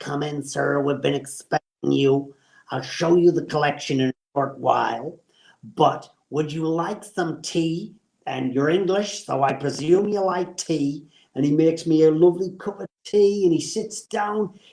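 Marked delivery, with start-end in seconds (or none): 0.0-11.1 rough, gruff showman voice. Retelling how a man welcomed him in and offered tea, in a gruff voice. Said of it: "he had a gruff voice".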